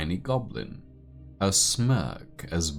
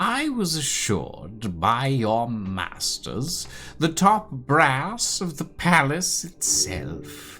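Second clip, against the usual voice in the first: shrill, disdainful voice, much higher; 10 semitones higher, 6 dB louder than usual. Game master voicing a woman addressing the cleric player, shrill, disdainful voice. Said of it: "Her words are tainted with disdain".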